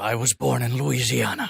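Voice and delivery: low, slow, rough, dragged-out delivery. Quoting a typical movie line: Liam Neeson impression. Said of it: "any Liam Neeson movie where he's like".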